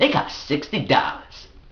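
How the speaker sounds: put-on puffed-up, proud, boastful bragging tone. Retelling a man's answer about his shoes, mimicking a proud boast. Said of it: "he said it like that was something to be proud of".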